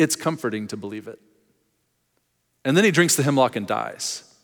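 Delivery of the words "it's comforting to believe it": mock-wry smirking tone, lower and quieter. Speaker acting out Socrates' reply before the hemlock, retelling a smirking reply. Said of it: "He smirks and he goes".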